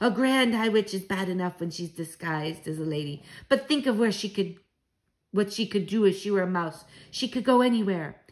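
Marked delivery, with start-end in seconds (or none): none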